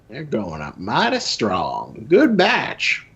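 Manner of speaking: put-on old Southern US accent with swooping pitch. Picturing a demon sitting at Rufio's plantation, speaking for it: put-on antebellum Southern voice. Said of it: "The classic imitation of like antebellum South".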